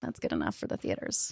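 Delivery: low, rasping mock whisper.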